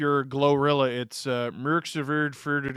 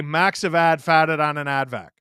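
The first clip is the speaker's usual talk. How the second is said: strong put-on Boston accent; 6 dB louder than usual. Broadcaster showing how a Bostonian would say a test sentence: thick Boston accent. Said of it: "That is my only Boston sentence".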